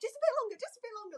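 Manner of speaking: play-acted, very high, rushed, urgent scream. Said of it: "we were all sat in our front room screaming away".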